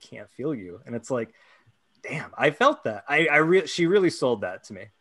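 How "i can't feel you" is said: whispered, much quieter than surrounding speech. Recapping a TV episode, quoting a character's line: whispering. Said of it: "she kind of whispers like".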